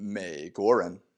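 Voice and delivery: 美 as low half third tone, not rising. Mandarin lesson on third tone before another syllable: low half third tone on 美. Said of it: "it's only half pronounced. The first half, it's just low".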